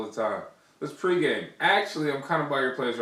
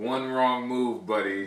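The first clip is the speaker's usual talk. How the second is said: usual speaking voice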